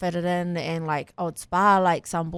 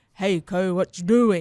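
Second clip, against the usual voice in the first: put-on broad northern Māori-accented speech. Showing how people back up north talk: imitating broad northern Māori speech. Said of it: "we talk, like, real, like, fresh Māoris".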